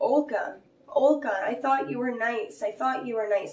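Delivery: screaming out over and over. Retelling what was screamed at the attacking dog: retelling a scream. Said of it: "I started screaming".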